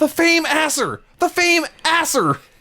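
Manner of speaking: very high, drawn-out, slow scream. Retelling a wrestling call, imitating Michael Cole screaming. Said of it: "Michael Cole screaming".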